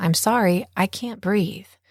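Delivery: normal talking voice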